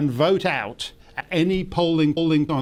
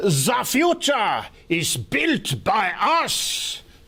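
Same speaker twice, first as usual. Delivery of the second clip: put-on menacing overdone German accent; 4 semitones higher than usual. Mocking Klaus Schwab's accent as getting more parodic: exaggerated Klaus Schwab German accent. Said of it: "Klaus Schwab's sinister Teutonic accent getting more parodic".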